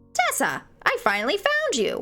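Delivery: squawky parrot voice, swooping in pitch. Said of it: "giving like a Polly want a cracker parrot voice".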